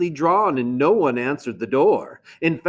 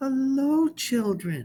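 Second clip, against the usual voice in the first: sweet, very high, soft voice; 9 semitones higher, 6 dB quieter than usual. Reading a story aloud, the narrator voices a character greeting the children in a sweet voice. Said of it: "someone said in a sweet voice".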